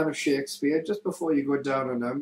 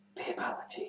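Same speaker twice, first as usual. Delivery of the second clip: very quiet, hushed, breathy whisper. Joking about what a partner should say after sex: mock whisper. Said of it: "just turn to your partner's ear and just whisper".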